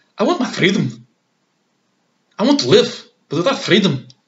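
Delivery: put-on, high-pitched Scottish accent. Recapping a run of accents, the speaker does a Scottish accent.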